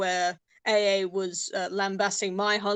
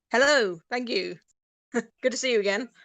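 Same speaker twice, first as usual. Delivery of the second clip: rather fake, put-on British accent; 3 semitones higher than usual. On the show Fake Accents Unite, the Britisher co-host answers the host's welcome, fake British accent. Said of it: "the British accent is uh, rather more fake this evening".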